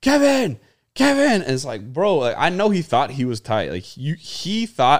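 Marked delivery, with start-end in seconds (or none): 0.0-1.4 shrill, very high, loud shouted yell. Retelling a fan shouting at the Rays center fielder, imitating a fan yelling. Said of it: "he's just yelling".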